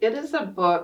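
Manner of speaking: ordinary delivery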